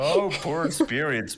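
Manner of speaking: mock sarcastic sympathy. Mocking another speaker's line about poor spirits: mocking sarcastic pity. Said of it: "that sounds so sarcastic".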